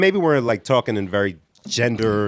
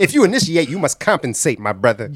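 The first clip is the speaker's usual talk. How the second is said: rhymes hit in rhythm with a beat; 2 semitones higher than usual. Repeating a rhyming line from the conversation: Jesse Jackson impression. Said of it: "I was just trying to get my Jesse Jackson on".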